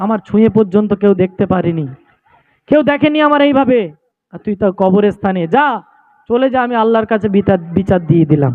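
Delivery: ordinary talk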